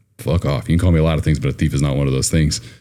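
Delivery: ordinary talk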